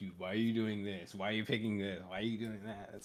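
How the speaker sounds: complaining, griping, nagging tone. Describing annoying players in ranked games, imitating a complaining player. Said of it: "someone complaining like".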